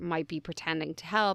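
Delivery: ordinary delivery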